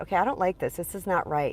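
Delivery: plain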